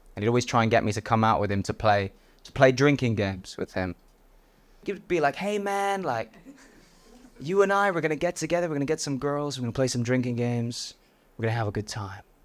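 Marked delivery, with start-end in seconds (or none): 5.4-12.2 put-on American accent, casual buddy-style. Retelling how a confident American friend urged him out: put-on American accent. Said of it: "there's something about an American accent".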